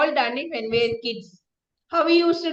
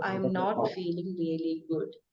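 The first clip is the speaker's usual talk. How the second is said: hushed, very low, very quiet, downcast, sad voice; 7 semitones lower, 12 dB quieter than usual. Speaker demonstrating how to play with the voice for projection, voice brought down. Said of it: "bring your voice down and say".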